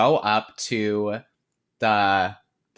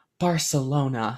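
imitated whisper; 3 semitones higher than usual. Retelling a scene from a film: imitating a whisper. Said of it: "she just whispers it".

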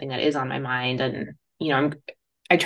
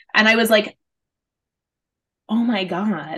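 ordinary delivery

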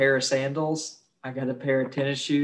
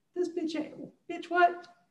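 put-on scared child voice, pitched much higher; 6 dB quieter than usual. Joking about Hitler looking up from hell, doing him as a scared little kid. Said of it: "Hitler sounded like a scared little kid".

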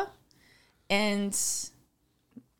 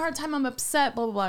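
normal talking voice

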